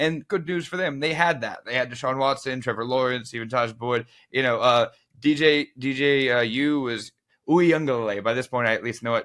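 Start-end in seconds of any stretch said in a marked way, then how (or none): 5.2-8.2 slight Italian accent, very slow and drawn out. Trying to pronounce a player's name, with a little italian accent. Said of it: "Did you throw in a little Italian accent".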